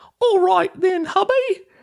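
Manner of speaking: very high, terrible put-on British accent. Retelling a wife character's line to her husband, in the worst British accent. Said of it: "the worst British accent that that I've ever heard".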